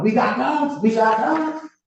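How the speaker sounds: mock slow, restrained, held-back hollering. Testifying about what she shouted: imitating someone hollering. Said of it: "she was hollering".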